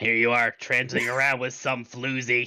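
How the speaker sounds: heavy smoker's voice. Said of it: "This is a real heavy smoker".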